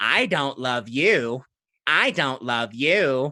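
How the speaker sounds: robotic, machine-like, mechanical talking-doll voice. Narrating a fight, the speaker voices a doll attacking an enemy: mechanical doll voice. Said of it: "The doll comes out with this mechanical voice going".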